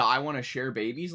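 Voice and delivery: ordinary talk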